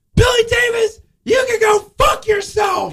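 shrill, very high, drawn-out screaming. Retelling how a sister yelled at the speaker before a show: imitating a scream. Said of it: "his sister who's just screamed at me".

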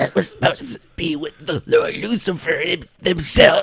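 very high-pitched, gargling voice. Narrating a scene and voicing Emma's line, in Emma's gargling voice. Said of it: "you hear Emma's gargling".

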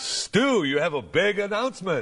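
deep broadcast radio announcer delivery. Playing the paid announcer who introduces the segment: announcer voice. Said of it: "the announcement from the paid announcer".

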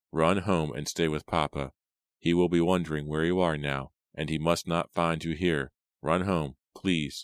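ordinary delivery

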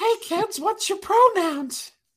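squeaky, very high cartoon character voice. Imagining a character greeting kids at Disney World, in a put-on cartoon voice. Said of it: "they might be calling you soon for voiceover".

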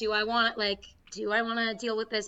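ordinary talk, nothing marked

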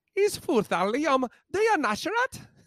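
high, bad, hammed-up fake Irish accent. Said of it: "I don't even know what accent this is".

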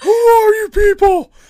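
very high, loud cartoon-style shout. Quoting a line after the other speaker mentions it: Patrick voice. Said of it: "I need to bust out my Patrick voice".

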